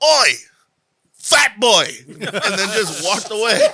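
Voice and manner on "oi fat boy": put-on very loud, high, typical English bloke accent. Retelling what a passing stranger said: imitating a typical english guy. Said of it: "he's just typical English guy".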